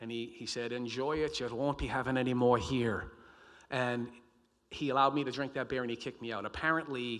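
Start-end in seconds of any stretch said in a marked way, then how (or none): 0.7-3.1 heavy, put-on Irish accent, said louder. Retelling what the bar owner told the speaker, heavy irish accent. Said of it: "He was an Irishman, right from Ireland, heavy, heavy accent".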